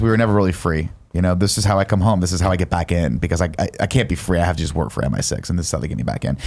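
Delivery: ordinary talk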